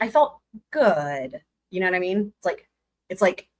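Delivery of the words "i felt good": mock negative-sounding tone, much slower. Retelling what she said about the class's reaction, the speaker is imitating a negative-sounding tone. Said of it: "it sounds negative to me".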